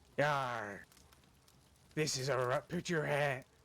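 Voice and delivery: put-on pirate voice. Acting out pirates robbing somebody at gunpoint: pirate voice. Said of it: "They hold their guns up and they say".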